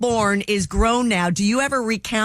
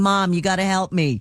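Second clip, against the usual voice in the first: ordinary talk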